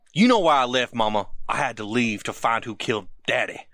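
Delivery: put-on low, thicker, laid-on Southern accent. A son answers his mama in a scene, more southern accent. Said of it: "Did he get more southern?".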